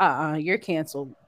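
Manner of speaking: normal talking voice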